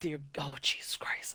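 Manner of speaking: unvoiced, soft whispered aside.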